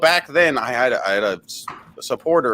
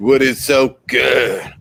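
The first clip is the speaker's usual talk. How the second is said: strained, straining voice with grunting. Repeating another speaker's greeting line: strained straining voice. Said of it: "Why did you sound like you was taking a shit?".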